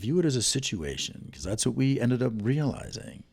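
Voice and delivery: movie trailer announcer style.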